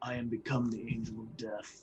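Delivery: whispering under breath. A tabletop player voices his character on his turn, whispering to himself. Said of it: "he whispers to himself".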